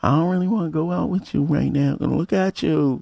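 put-on woman's voice. Retelling what she would say about going out: imitating her voice. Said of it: "That's my voice".

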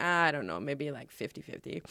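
mock casual, unbothered, nonchalant, offhand delivery. Retelling a dancer's answer to his mentor: imitating a nonchalant reply.

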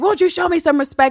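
very high, wounded, upset yell. Describing a scene where a man yells at a woman, retelling a yell. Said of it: "And he yells like".

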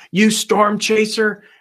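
mock, furious, high-pitched scream. Retelling how a man came out of his house: imitating someone screaming. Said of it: "starts screaming at me".

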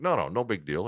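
ordinary delivery

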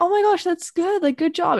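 sincere, earnest tone. Retelling others' reaction to a chemistry grade before practice, acting out sincere praise. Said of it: "not in a sarcastic way, like, genuinely".

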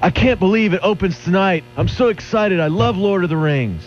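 shrill, very high, full-throated screaming. Retelling a guy in a theater lobby on opening night: imitating a guy screaming. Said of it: "screaming at the top of his lungs like".

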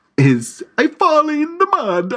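put-on very broad Italian accent. Describing accented characters, doing the italian one in a broad italian accent. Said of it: "It's very broad".

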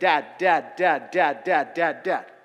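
put-on loud, desperate, needy child's pleading, on and on. Showing listeners how to pray, imitating a desperate kid calling his dad. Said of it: "Like that kid".

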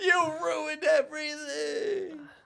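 very high, pathetic, pitiful shriek. A fire wizard is dragged away by a hippogriff, yelling at firefighters; pitiful villain scream. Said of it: "As he's dragged away".

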